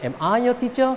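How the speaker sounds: pitch climbs upward at the end of "teacher". Reminding kids at home about yes-no questions: rising pitch at end on teacher. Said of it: "intonasinya naik".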